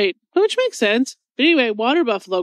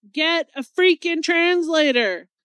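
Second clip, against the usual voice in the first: high yell with each word stretched out; 6 semitones higher than usual. Retelling yelling at the tv about the translating: retelling yelling at the tv. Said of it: "yelling at the T V".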